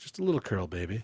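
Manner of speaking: sultry, sexy, very low and soft voice. Speaker performs a made-up hair product advert for a listener, in a sultry sexy voice. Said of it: "my abilities as a newsreader and an advertiser".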